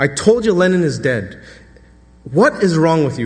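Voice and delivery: ordinary talk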